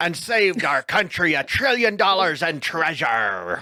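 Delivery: put-on pirate voice. Reading a passage aloud to add a little humor: pirate voice. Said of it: "but like in a pirate's voice".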